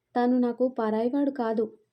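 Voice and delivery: ordinary delivery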